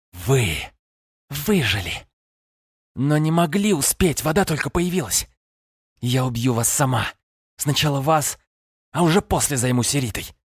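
enraged, furious, swooping hiss. Narrator reads the sorceress turning on those who confronted her, hissed. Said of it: "прошипела".

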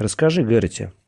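ordinary delivery

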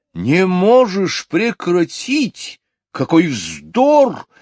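enraged, furious, high-pitched outburst. The king answers the cow, exclaiming in fury. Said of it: "в ярости воскликнул король".

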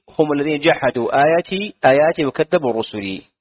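normal talking voice

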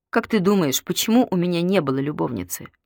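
usual speaking voice

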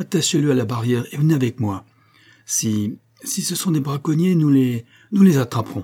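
choked, strangled voice. A man speaks to a young man who has a horse, in a strangled voice. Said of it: "dit-il d'une voix étranglée".

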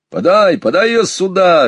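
cheerful, happy shout, very high-pitched. A father who has just shot a duck calls out, a cheerful shout. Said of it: "весело крикнул ему папа".

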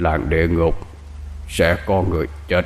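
put-on deep, hushed old man's voice. A talking snake turns back to a man and speaks, in a deep older man's voice. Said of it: "bằng cái giọng trầm trầm của một người đàn ông đã luống tuổi".

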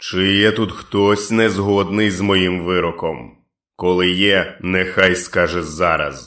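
booming, thunderous, resounding loud voice. A narrator reads the dark man's question to the crowd, booming thunderous voice. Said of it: "Громовим голосом Флег спитав їх".

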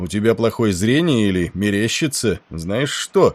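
ordinary delivery

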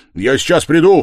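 very loud, high shout, projected as across a room. Narrator reads Razumikhin calling to Pulkheria Alexandrovna before running out, shouting. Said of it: "крикнул он".

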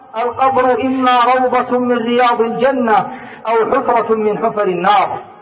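ordinary talk

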